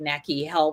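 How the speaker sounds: ordinary delivery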